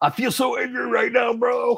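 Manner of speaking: very high, pumped-up, roided-out bro voice. Imitating the main guy of a ghost show: Zak Bagans impression. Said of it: "the main guy, Zach Baggins, is, like, completely roided out, and he'll, like, he'll be like".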